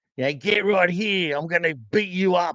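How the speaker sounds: exaggerated Australian accent, laid on thick. Imitating how South Australians talk: exaggerated Australian accent. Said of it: "it's overly Australian".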